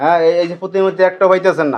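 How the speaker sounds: ordinary delivery, nothing marked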